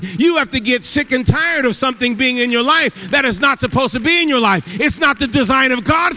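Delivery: full-on loud preacher yell, shouted out. Speaking to a church audience about healing after prayer, yelling. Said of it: "I'm yelling".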